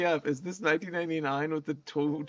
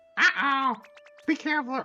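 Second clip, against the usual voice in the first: high-pitched little creature voice; 9 semitones higher, 3 dB louder than usual. Streamer reading a game line aloud, attempting a Charmander voice. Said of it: "I can't do that voice".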